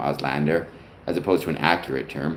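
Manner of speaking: ordinary talk, nothing marked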